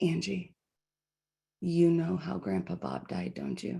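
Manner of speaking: soft, hushed half-whisper under the breath. Retelling what Rex half-whispered to her at Subway while grandma was away, imitating Rex half-whispering. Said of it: "Rex leans over and whispers".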